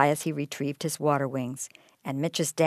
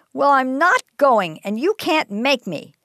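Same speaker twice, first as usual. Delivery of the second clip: loud, very high-pitched, stubborn, defiant delivery; 10 semitones higher, 6 dB louder than usual. Narrating a story, a boy answers his mom: voice growing louder. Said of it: "Mitch's voice grew louder".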